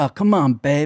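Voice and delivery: phony, schmoozing fake Los Angeles Hollywood guy voice. Retelling an impression of a fake LA Hollywood acquaintance: imitating a fake Hollywood guy. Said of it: "when we were doing an impression of him".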